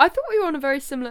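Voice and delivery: very loud voice breaking, cracking high. Chatting with a co-host about the music round, voice cracking mid-sentence. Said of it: "Why did my voice break?".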